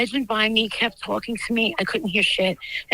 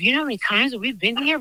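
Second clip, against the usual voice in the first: usual speaking voice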